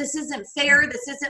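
put-on hysterical crying. Retelling bursting out crying at a father's news: retelling own hysterical crying. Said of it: "I was just hysterical".

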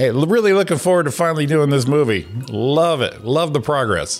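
put-on earnest, sarcastic tone. Acting out a pretend email to a group: put-on sarcastic tone. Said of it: "but make it sarcastic".

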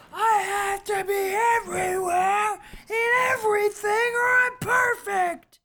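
very high, top-of-the-lungs screaming rant. Describing a movie character's lines, imitating a man screaming. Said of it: "That was a great impression".

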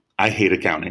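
whispered delivery. Retelling leaning over to a roommate in math class: retelling a whisper. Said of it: "I just kinda whispered".

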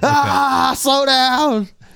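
screaming. Acting out being dragged along as a bloody skateboard: screaming. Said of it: "I'm just screaming".

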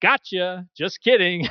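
put-on laughing voice. Retelling what a woman said after pausing, retelling a laughing reply. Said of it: "she pauses briefly and laughs and says".

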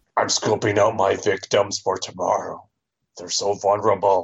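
put-on monster voice. Describing the Minotaur sitting with a cocktail, voicing it like Rupert Bonham. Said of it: "Why is the Minotaur Rupert Bonham?".

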